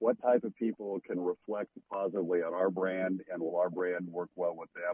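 ordinary talk, nothing marked

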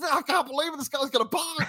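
high, thrilled salesman voice. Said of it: "He was, he was thrilled".

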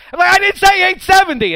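shrill, loud yell. Retelling arguing with a car that misheard the station: retelling own yell at car. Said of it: "and I'm yelling at the car".

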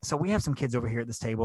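soft, quiet half-whisper. Retelling what a server said quietly about kids at a table: imitating a server's half-whisper. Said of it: "and kind of whispered to me".

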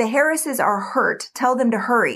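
usual speaking voice

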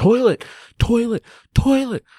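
shrill, very high yelling, over and over. Speaker retelling reaching the top and needing a toilet, yelling for a toilet. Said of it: "I'm just yelling".

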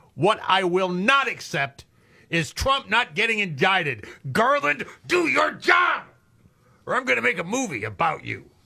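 high, heated, ranting mock yelling. Reading out a tweet that calls on garland, mock yelling. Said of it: "Why are you yelling?".

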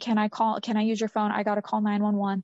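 mock pleading, begging. Retelling Jessica asking for a phone to call 911: imitating someone begging. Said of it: "Jessica's begging".

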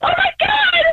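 frightened cry.

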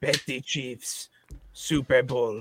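put-on heavy Polish accent, laid on thick. Quoting a drunken Polish dad at a party, in a thick Polish accent. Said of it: "like thick Polish accent".

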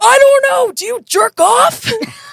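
very shrill, very high, loud yell. Recalling yelling at a guy while people wait in line behind, reenacting the yell. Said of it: "And I literally yelled".

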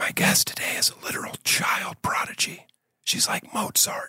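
whispered, hushed golf announcer voice. Introducing today's guest: hushed golf whisper voice. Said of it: "I did that in the golf whisper voice".

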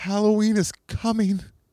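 play-acted very high, tearful, sobbing toddler wail. Retelling what a boy crying in his crib said, imitating someone crying. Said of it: "while crying".

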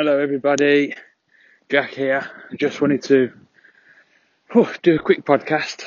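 out of breath. Podcast host opening a quick episode after a bike ride, out of breath. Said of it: "I'm out of breath".

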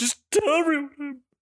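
put-on very high, pathetic, pitiful, sorrowful voice. Acting out a movie character answering his secretary's call from his office, imitating a weird, pitiful, sad voice. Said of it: "pitiful, sad fucking voice when he's like".

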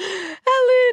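high, breathy, mock upset wail.

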